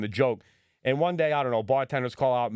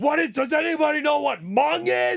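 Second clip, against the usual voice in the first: loud, full-on intense holler, very high; 4 dB louder than usual. Imitating a high-intensity guy asking the room a question, in a loud voice. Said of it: "like loud voice".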